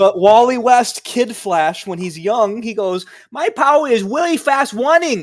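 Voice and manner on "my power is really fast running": cartoonish voice, pitched a bit higher. Quoting Kid Flash describing his power: sounding like Elmer Fudd. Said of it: "You sound like Elmer Fudd".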